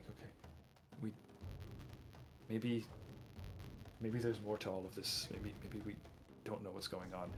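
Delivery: barely audible, very soft, hushed whisper. Storyteller voicing characters as they look at each other, whispering. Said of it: "sorry, I'm whispering".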